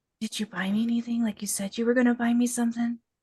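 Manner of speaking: whispered speech. Retelling a question to a woman peering through boxes: retelling a whisper. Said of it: "I whispered to her".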